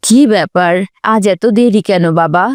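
usual speaking voice

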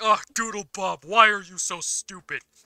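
high, very loud, sophisticated refined voice, belted out. Imitating Doodle Patrick scolding Doodle Bob: Doodle Patrick voice. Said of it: "Doodle Patrick is sophisticated".

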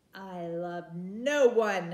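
very slow proud delivery. The princess answers the witch's demand for a name, proudly. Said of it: "said the princess proudly".

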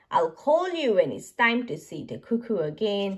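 ordinary delivery, nothing marked

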